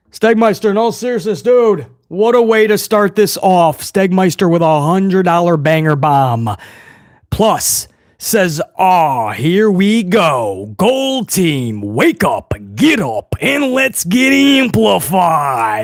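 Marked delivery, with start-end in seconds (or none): 10.7-15.8 big, slow, put-on tough-guy macho voice. Streamer fires up the gold team at the start of the stream, in a macho voice. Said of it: "I did that in the macho voice".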